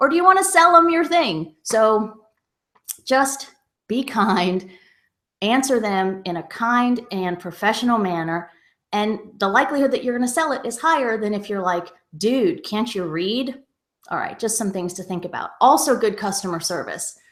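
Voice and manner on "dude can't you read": mock, slow, drawn-out, snarky smart-alec tone. Acting out a seller answering a silly buyer question: mock snarky reply. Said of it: "by being a smarty pants".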